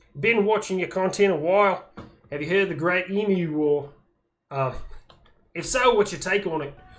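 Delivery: put-on Australian accent. Reading a viewer's comment aloud, the speaker tries a put-on Australian accent. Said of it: "I hope that wasn't too bad of an Aussie accent".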